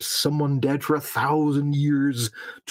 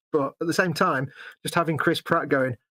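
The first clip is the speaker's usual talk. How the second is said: normal talking voice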